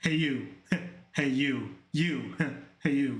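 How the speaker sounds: put-on smug voice. Speaker mimics someone greeting them, in T Money's smug voice. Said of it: "T Money's smug voice".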